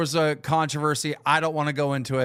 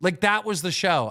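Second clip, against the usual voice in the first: plain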